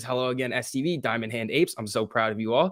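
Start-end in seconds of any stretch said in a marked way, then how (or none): none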